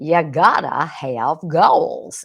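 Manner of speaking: put-on loud Texas accent. Quoting what a late man would always say, imitating a deep Texas accent. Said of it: "that's kind of how he would say it".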